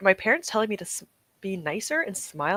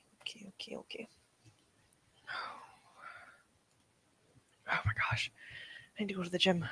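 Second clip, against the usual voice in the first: very soft, winded, breathless, gasping near-whisper; 12 dB quieter than usual. Speaker just back from rushing back and forth, out of breath. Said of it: "I'm like out of breath from rushing back and forth".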